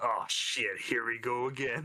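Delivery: gruff, rough voice. Player voicing their character turning around after getting a message: gruff Harmony voice. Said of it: "in a gruff in a gruff voice".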